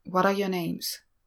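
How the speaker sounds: ordinary delivery, nothing marked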